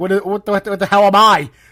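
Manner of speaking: put-on English accent. Retelling what a woman said after hearing her remark; English accent. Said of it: "in English accent".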